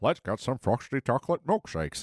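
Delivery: early-style cartoon sitcom dad character voice. Quoting a line from an episode in an early Homer voice. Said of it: "I'm good at, like, season one, Homer".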